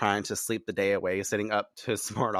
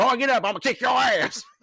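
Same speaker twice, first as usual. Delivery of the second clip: brash, obnoxious, very high, loud shout; 6 dB louder than usual. Narrating a scene and voicing the brother: loud, obnoxious yelling. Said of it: "his brother's like loud and obnoxious".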